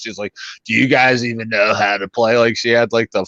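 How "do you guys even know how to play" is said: put-on raspy chain-smoker voice. Retelling a woman at the blackjack table mocking them, in a raspy chain-smoker voice. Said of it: "really raspy voice of like a chain smoker".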